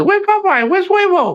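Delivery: put-on quick, very high little-kid voice. Retelling how little Brooklyn asked for Popeye: imitating Brooklyn, quick. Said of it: "Like that".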